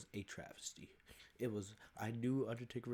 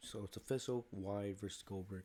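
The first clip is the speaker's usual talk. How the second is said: ordinary talk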